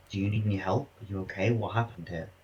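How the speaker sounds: whispering. Player's character approaches a crawling figure, not wanting to draw attention: whispering. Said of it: "Can I slowly approach and whisper".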